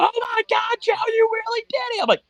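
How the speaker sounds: very high, cheerleader-style screaming. Retelling a friend rushing in after the game: imitating a screaming cheerleader. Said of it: "screaming at me like a cheerleader".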